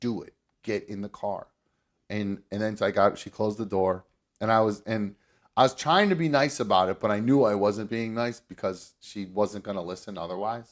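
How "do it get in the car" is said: put-on stern mutter, lower and quieter. Retelling ordering Mom to get in the car: imitating a stern muttered order. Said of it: "very matter of fact, very stern".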